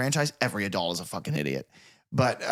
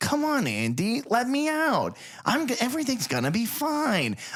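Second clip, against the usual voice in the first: put-on doll voice, much higher, slower; 12 semitones higher than usual. Comparing horror movies, playing the doll calling from the closet, Chucky impression. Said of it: "I'm working on my Chucky impression".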